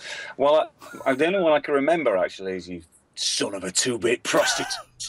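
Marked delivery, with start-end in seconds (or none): 2.7-5.1 performed fully in character, swooping, swinging pitch. Answering a request to say a favorite insult: Hoxton voice. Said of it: "can you say it in the Hoxton voice".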